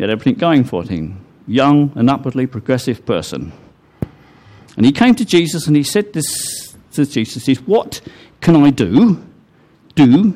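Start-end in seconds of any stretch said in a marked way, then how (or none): 8.7-10.3 heavy stress on the word do. Retelling a young ruler's question to Jesus, with stress on 'do'. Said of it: "emphasis was on do".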